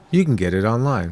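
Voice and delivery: play-acted smug, self-satisfied know-it-all tone. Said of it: "with that smug look again and says".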